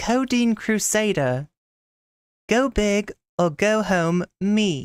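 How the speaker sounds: cheeky, sassy British accent, reading voice. Emulating how a sassy british voice would have read the message: sassy british voice. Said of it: "I'm gonna try to do my best to uh, emulate".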